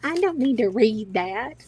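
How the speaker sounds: Southern accent. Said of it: "you can say that in a Southern accent".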